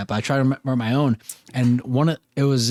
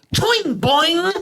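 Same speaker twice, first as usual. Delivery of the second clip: higher-pitched, put-on Australian accent, man's voice; 3 dB louder than usual. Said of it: "that's the Australian".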